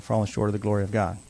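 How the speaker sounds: ordinary delivery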